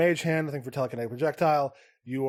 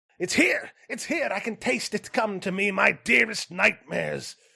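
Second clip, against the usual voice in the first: high, gleeful, delighted shriek; 7 semitones higher than usual. Narrator voices her as she rushes to the treasure pile, shrieking in delight. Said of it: "She shrieks in delight".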